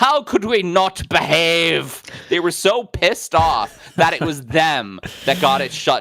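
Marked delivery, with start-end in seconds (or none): 0.0-2.0 Irish brogue, higher and louder. Imitating Irish people reacting to a city's shutdown: Irish accent. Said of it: "That was a very good Irish accent".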